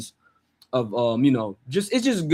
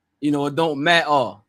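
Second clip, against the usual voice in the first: fake working-class English accent, t's dropped. Speaker demonstrating the accent while describing it, in a working-class English accent. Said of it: "Like they don't pronounce the T's".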